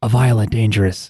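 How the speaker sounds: soft, hushed, secretive murmur. Retelling how a character half-whispers a question to her: imitating a half-whisper. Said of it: "whispers to her".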